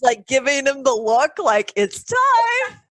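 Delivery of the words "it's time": very high, silly, funny monkey voice. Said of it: "this really funny voice of, like, it's the, the monkey, like, in Heat".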